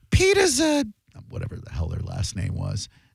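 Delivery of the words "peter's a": very high, slow, shrill voice. Telling a story about a family meal, the speaker imitates Aunt Susie's shrill voice. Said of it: "my Aunt Susie with that shrill ass voice".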